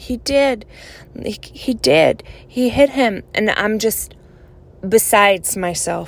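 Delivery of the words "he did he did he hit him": tearful, speaking through tears. Recounting answering an elder after seeing a man get hit: retelling speaking in tears. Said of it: "I'm like in tears".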